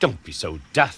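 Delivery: snorting tone. In a Thomas story, Percy answers Thomas, snorting. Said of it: "snorted percy".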